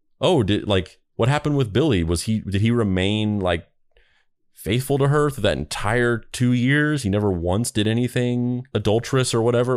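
ordinary talk

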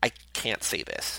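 mimicked tearful, choked voice. Retelling how a man could not finish speaking, imitating choking back tears. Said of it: "Choking back tears".

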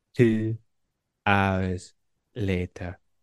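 cartoon narrator voice, announcement style. Asked for a good impression, doing one from SpongeBob: SpongeBob narrator impression. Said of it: "I can do this from SpongeBob".

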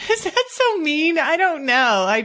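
speaking through laughter. A speaker sharing a personal story, laughing while talking. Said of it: "I'm sorry I'm laughing".

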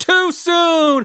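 mock screaming. Retelling how people reacted to the game's announcement: imitating people screaming. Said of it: "people were screaming".

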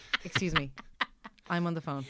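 put-on businesslike phone manner. Imitating a friend who talks to her kids on the phone: businesslike phone manner. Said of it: "it's like she's a businesswoman and they're her colleagues".

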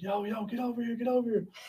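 play-acted rowdy hollering. Retelling how players yelled at him while walking out: imitating teammates yelling. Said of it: "all my teammates were yelling at me like".

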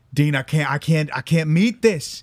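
put-on light Southern accent. Acting out a small business owner who is going broke, slight Southern accent. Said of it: "He's got slightly a Southern accent".

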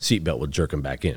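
ordinary talk, nothing marked

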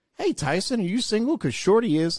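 clumsy fake Oklahoma accent, very high-pitched. Retelling a guy's opening line to a woman, in a bad Oklahoma accent. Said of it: "with just his Oklahoma, you know, accent".

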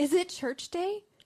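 high, thrilled, bubbling, eager excited voice. Parent retells their daughter coming home on church day, imitating an excited daughter. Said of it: "she's all excited".

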